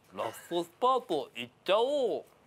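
choppy, halting, syllable-by-syllable broken foreign speech. Asked to redo the line more brokenly, trying it again in broken, halting speech. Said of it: "もっとなんていうか片言で".

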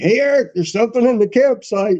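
acted high-pitched yell. Retelling a night warning that something is in the campsite: retelling own yell. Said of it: "And I'm yelling".

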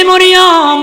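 high, slow, drawn-out call.

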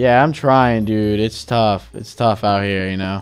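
weary, worn-out, low tired voice. Mining in Minecraft while a co-player checks on your progress, sounding tired. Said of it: "You sound very tired".

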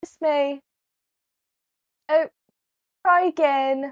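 very British, put-on accent. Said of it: "Very British".

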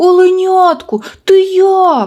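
very high, alarmed, anxious shout. A narrator reads friends calling to the fawn that fell in, anxious shout. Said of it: "стривожено закричали друзі".

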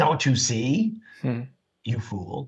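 condescending, belittling, talking-down tone. Speaker retelling his father's reply, more condescending than it was, mock-condescending tone. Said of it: "as condescending a manner as I'm saying it now".

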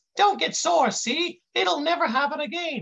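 put-on high-pitched voice of a big kid. A narrator voices a kid apologizing to an agent, in a high voice. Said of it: "the kid says in this high voice".

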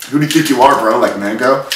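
ordinary talk

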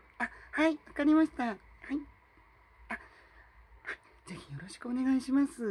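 high-key polite voice. Showing the high voice key normally used at work. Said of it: "みたいな感じのキーの高さで普段は仕事はしています".

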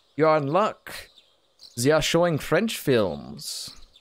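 "b b" in put-on German accent. Voicing the game character B B inviting the player to the movies: put-on German accent for B B. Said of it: "I know it's not a French accent".

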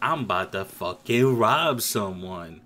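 comedic gangster voice. Describing an actor playing a comedic gangster character, imitating comedic gangster character. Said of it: "He's like".

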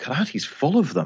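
high-pitched, exasperated disbelief.

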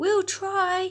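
loud, squeaky little mouse voice, way up high. Narrating a story, the mice answer the rabbit, squeaking loudly. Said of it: "they squeaked loudly".

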